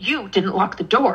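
short, snippy, annoyed, reproachful tone. Retelling coming downstairs tired to her husband, acting out a snippy tone. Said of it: "I'm saying it in like a snippy tone".

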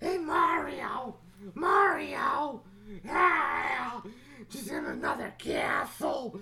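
very high-pitched, crying wail. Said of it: "It sounds like Toadstool".

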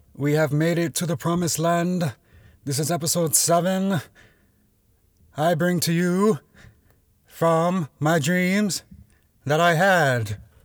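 high-pitched, put-on, grand orator voice. Opening a podcast episode jokingly: Martin Luther King impression. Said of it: "That's my best Doctor Martin Luther King, um, impression".

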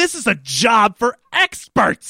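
very slow, deliberate, high, drawn-out screaming shout. Retelling MacGyver confronting Nikki as she rigs explosives, imitating him screaming. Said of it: "And he's like screaming at her".

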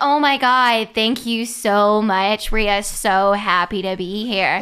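loud, very slow put-on American accent, Australian underneath. Imitating a woman who flashes into another accent, Australian doing an American accent. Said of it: "this American accent that was very evidently an Australian speaking an American accent".

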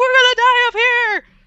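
shaking, very high, loud acted-out scream. Recalling a windy night hike, the speaker acts out screaming, shaking. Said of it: "Shaking, screaming, like".

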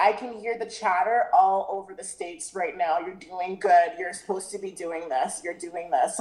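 ordinary delivery

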